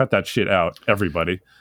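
ordinary talk, nothing marked

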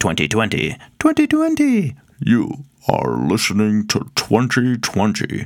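put-on Scottish-accented voice. Saying the year on a podcast in Sean Connery's voice. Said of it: "I don't know why I did that in Sean Connery's voice".

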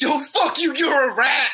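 very high, furious ranting with swearing. Retelling watching a guy curse out people who ratted on him, imitating Andre cussing out. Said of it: "watch him cuss out six people individually".

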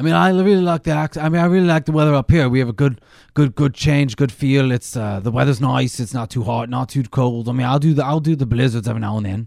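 fake Australian accent.

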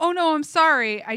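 put-on Australian accent. Speaker quotes a man from work apologizing, in his australian accent. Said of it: "In his Australian accent".

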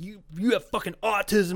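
mock furious. Retelling how he lashed out at the speaker: imitating someone really mad. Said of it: "really mad".

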